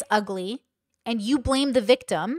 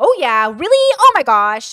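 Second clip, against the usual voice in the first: very loud, high-pitched comedy character voice; 4 semitones higher, 10 dB louder than usual. Imitating another speaker's comedic character: imitating her loud high comedic voice. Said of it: "It's, like, very loud".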